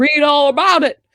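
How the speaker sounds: high-pitched, muddled, botched mid-Atlantic accent. Joking with a co-speaker, trying an attempted mid-Atlantic accent. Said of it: "I was going for like a mid-Atlantic sort of thing".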